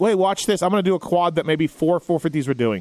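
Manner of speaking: ordinary delivery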